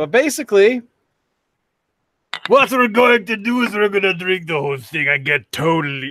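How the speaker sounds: bad put-on Russian accent. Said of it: "that was the worst accent I've attempted ever".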